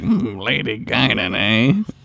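put-on old Southern storyteller voice. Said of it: "the fry squint, and he's like".

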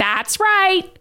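put-on cartoon cat voice, very high. Podcast hosts imitating a cartoon character together: Meowth voice. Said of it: "Do people know that we're imitating meowth?".

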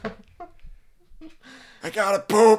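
shrill, very high, slow, drawn-out shouting. Voicing a loud old dog demanding food: mock yelling dog voice. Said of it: "Why do you sound like that?".

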